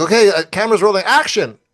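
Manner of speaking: loud high-pitched yell. Retelling calling action on a film shoot: imitating own yell. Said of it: "And I yelled".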